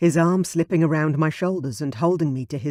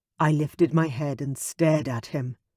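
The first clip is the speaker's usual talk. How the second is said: ordinary delivery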